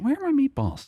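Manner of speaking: genuinely puzzled, quizzical, very high-pitched delivery. Retelling own earlier question about missing meatballs: imitating a quizzical question. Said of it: "more, like, quizzically".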